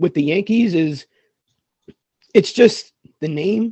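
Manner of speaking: strained hoarse voice. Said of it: "I'm losing my voice".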